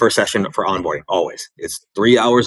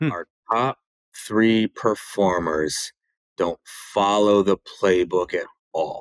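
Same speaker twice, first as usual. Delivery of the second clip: really slow and softer; 6 dB quieter than usual. Showing his slowdown technique, repeating the other person's statement really slow. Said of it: "but really slow".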